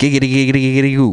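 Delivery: best-attempt cartoon character voice. Giving a best attempt at a cartoon character voice: Quagmire voice. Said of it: "I don't know how to do a Quagmire voice, but here's my best attempt at it".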